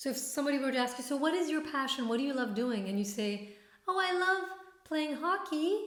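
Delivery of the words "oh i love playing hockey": upspeak, rising at the end on hockey. Explaining upspeak with an example answer about a passion: rising upspeak at the end. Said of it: "Upspeak is when you speak and you're saying something, but it sounds like a question".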